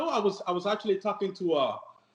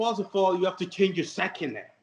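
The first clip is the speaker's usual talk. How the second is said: normal talking voice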